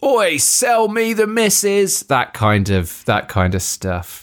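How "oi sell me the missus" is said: impolite high-pitched shout. Retelling what soldiers shouted at German bystanders: imitating soldiers shouting. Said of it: "Couple of things are shouted".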